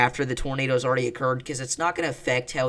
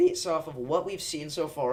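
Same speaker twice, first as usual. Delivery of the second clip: cracking, breaking voice mid-phrase; 3 semitones higher, 5 dB quieter than usual. Presenting a prediction to viewers, voice cracking. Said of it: "ignore the voice crack".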